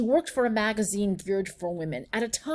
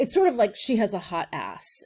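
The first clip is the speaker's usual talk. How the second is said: ordinary delivery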